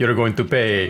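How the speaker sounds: put-on flat, expressionless, level deadpan delivery. Recalling their own line during a maneuver; retelling a very deadpan line. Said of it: "very deadpan".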